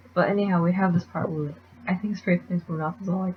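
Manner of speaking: ordinary talk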